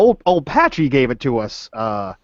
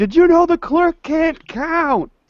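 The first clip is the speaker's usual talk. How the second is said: very high-pitched, raised, drawn-out yell. Repeating a question to a character who answered "What?": yelling louder. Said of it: "I yell louder".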